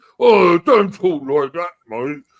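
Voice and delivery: high, loud, mocking, dim-witted voice in mock protest.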